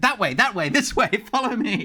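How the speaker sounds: very high, loud, sputtered-out words. Voicing a character who points the way while spluttering. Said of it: "that is spluttering, and he's like".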